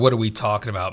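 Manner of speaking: ordinary talk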